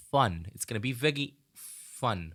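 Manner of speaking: heavily sarcastic, insincere delivery. Reading out game balance changes to viewers: sarcastic. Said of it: "You get my sarcasm".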